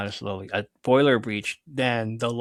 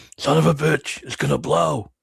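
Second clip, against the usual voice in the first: loud, rough, raspy voice; 4 semitones higher, 6 dB louder than usual. Imitating someone from Supernatural, giving the line in a rough raspy voice. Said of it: "his raspy voice".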